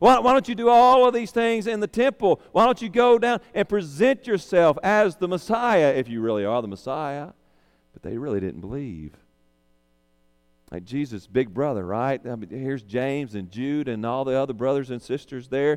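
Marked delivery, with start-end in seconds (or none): 0.0-7.3 raised, high, mocking, needling sarcastic taunt. Retelling how the brothers taunted Jesus: imitating sarcastic brothers. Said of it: "So they were being sarcastic".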